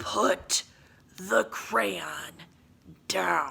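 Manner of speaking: rough, snarling, growling monster voice. Narrator reading a monster's order to a kid, in a growling monster voice. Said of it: "as he growled".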